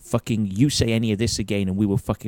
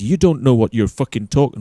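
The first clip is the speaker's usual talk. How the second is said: put-on mock-angry Scottish accent, louder; 6 dB louder than usual. Retelling how Malcolm raised his voice in an argument, Malcolm's mock-angry Scottish accent. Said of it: "he's not Scottish".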